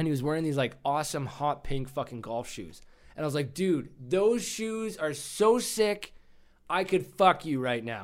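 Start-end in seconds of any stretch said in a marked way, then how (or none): 3.5-8.0 shouted, high, drawn-out yell. Retelling what they shouted at a charity tournament registration table, re-enacting own yell. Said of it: "I yelled that".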